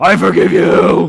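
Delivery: very loud, booming, rasping, rough monster voice. Retelling how a child answers an apology, using his monster voice. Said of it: "he'll use his monster voice and he'll go".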